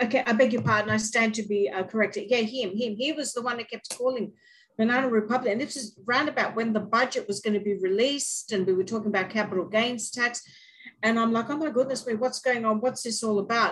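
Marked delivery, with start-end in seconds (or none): 11.5-13.7 play-acted real panic, flustered and alarmed. Retelling their own reaction to talk of capital gains tax: imitating own panicked reaction. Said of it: "In, in real panic".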